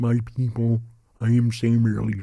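put-on deaf-sounding voice.

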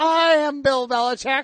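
very slow, disturbingly self-assured. Repeating another speaker's line to tease them: imitating a disturbingly confident line. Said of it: "you said that with a disturbing amount of confidence".

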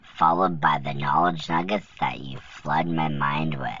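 whispered softly.

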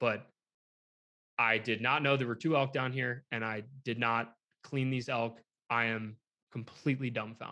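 ordinary talk, nothing marked

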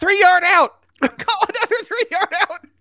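very high-pitched, coach-style sideline call. Retelling what a coach would have called last year: imitating Jimbo Fisher. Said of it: "Jimbo would have been like".

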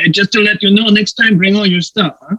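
put-on French accent. Retelling what a man told them on a show, put-on French accent. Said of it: "got this French accent".

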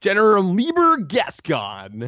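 high, wildly swinging pitch. Naming a cartoon general from a callback: terrible General Gascon impression. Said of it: "That's a terrible, terrible impression of him".

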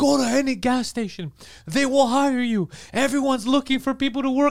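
mock yelling. Retelling how someone was yelling in the street: imitating someone yelling. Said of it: "And he's yelling".

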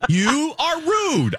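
acted, overwrought outburst. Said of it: "I felt like Sally Field at the end of Steel Magnolias".

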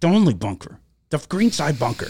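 sharp, snappy, fake annoyance. Retelling a golfer's reply to his caddy, retelling a snappy reply. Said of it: "He snapped at his poor caddy".

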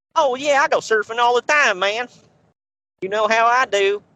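put-on Texas accent, very high-pitched. Joking with co-hosts about a wrestler as a surfer dude, Texas accent. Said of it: "try saying Cowabunga Dude with a Texas accent".

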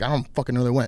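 ordinary delivery

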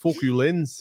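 attempted put-on Australian accent. Asked by the others to do an accent, say it in an Australian accent. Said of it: "I was spot on with that".

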